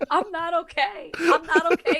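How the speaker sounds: high, tearful pleading.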